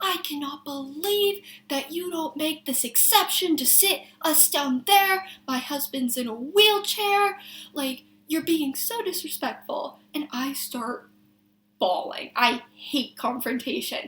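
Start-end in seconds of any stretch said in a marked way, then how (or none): 0.0-10.0 play-acted heated, indignant, scolding, accusing tirade. Retelling a customer's complaint at work: imitating a woman screaming. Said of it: "she's screaming at me".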